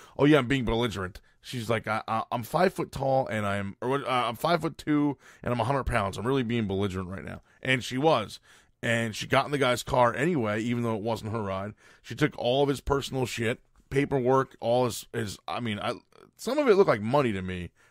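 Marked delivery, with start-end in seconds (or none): none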